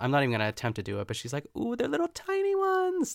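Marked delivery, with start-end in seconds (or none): 1.6-3.1 very high female soprano voice, climbing upward. Describing a woman arranging cookies on a cake, imitating her sudden soprano voice. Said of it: "her voice goes like she turns into a soprano all of a sudden".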